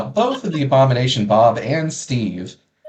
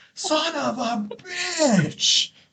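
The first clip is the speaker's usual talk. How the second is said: very high cry shouted from far away; 6 dB quieter than usual. Game master voices someone shouting from the hole in the wall, distant shout. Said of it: "distance shouting from the hole in the wall".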